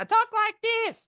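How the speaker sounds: very high, excitable squeaky voice. Speaker explaining their voice rises when overemphasizing, showing a higher excited voice. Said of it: "my voice gets higher".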